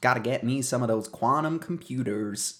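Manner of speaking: put-on American accent. Trying out pronunciations for a listener, in a put-on American accent. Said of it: "whoa that was pretty good".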